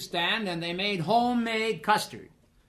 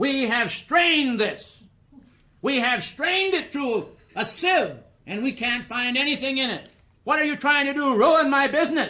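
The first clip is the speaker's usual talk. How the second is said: mock raised voice, loud, pitched-up, complaining tone; 5 semitones higher, 4 dB louder than usual. Retelling how the place's proprietor marched up and spoke, in a loud voice. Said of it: "in a loud voice he said".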